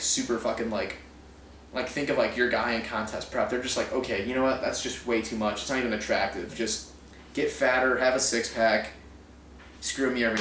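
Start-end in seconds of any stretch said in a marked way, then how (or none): none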